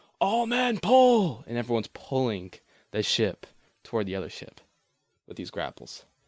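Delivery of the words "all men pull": much higher, louder, slower yell. Describing the ship being pulled in, the captain yelling an order. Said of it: "the captain's yelling".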